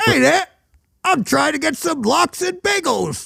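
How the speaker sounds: put-on Brooklyn accent. Asked to show off accent skills on the spot, doing a Brooklyn accent. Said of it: "Could you have done a Brooklyn accent?".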